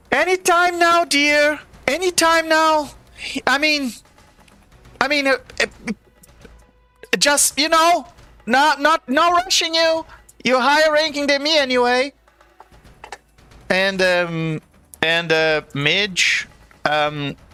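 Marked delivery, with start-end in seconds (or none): 0.1-12.1 very high, shrill, called-out yelling. Voicing a character calling out to the party: shouting. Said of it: "and you hear him shouting".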